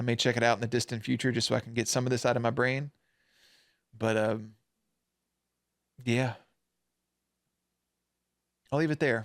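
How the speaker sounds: emotional voice, fighting and holding back tears. Talking about a show they watched, holding back tears. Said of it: "Sorry for the emotional side of it".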